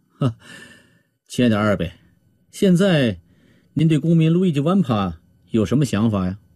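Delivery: plain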